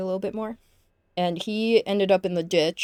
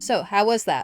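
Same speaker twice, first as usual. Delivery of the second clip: ordinary talk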